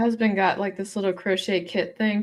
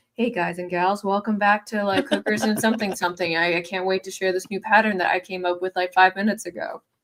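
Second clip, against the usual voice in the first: normal talking voice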